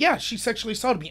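usual speaking voice

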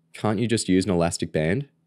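plain reading voice

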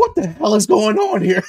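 most frightened voice, high, loud cry. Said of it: "in the most frightened voice".

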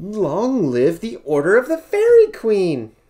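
very loud, joyful rising shout, "long" stretched. After the last witch disappears, the narrator shouts happily. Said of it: "I shouted happily".

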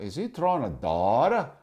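heavily put-on, strong Massachusetts accent. Retelling a guy watching Tommy fish, Massachusetts accent. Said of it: "Massachusetts accent".

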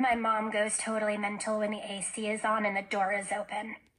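usual speaking voice

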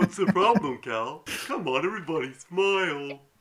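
put-on children's TV dinosaur character voice. Playing a dinosaur character named Dino Dave in the game: Barney voice. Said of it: "I'm gonna sound like Barney".

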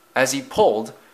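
ordinary delivery, nothing marked

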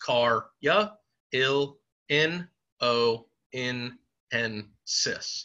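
very slow, choppy, syllable by syllable. Breaking a long word down to spell it right: each syllable said separately. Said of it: "I broke it down into these choppy little syllables".

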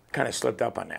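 usual speaking voice

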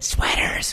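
urgent, excited, unvoiced hissed whisper. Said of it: "looking at me going".

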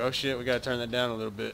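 plain

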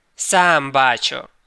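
booming voice. A dragoon captain answers the frightened host, thundering. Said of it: "гримнув капітан".

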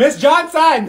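loud, high-pitched call-out, too loud. Told to just say her name, calling out to Miss Johnson too loudly. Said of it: "that was too loud".

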